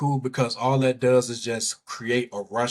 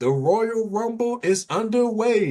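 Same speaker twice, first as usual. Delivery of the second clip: very high-pitched announcer-style call; 10 semitones higher than usual. Opening a Royal Rumble recap, Gorilla Monsoon voice. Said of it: "in my Gorilla Monsoon voice".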